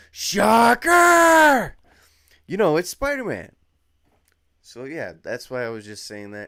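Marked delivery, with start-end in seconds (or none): 0.2-1.8 very high, very loud shout. Explaining how a Spider-Man voice is recognized, Christopher Daniel Barnes yell. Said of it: "sorry if I yelled it too loud for y'all".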